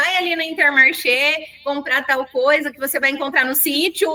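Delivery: ordinary delivery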